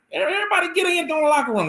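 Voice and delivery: really high-pitched, very high voice. Retelling the head coach calling everyone in at halftime: imitating Alan Wilson's high-pitched voice. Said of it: "he has a real high-pitched voice".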